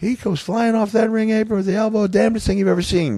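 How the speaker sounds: very high-pitched voice. Retelling a wrestling story, quoting a man on an elbow drop: high-voiced Jim Cornette impression. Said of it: "he got a high voice".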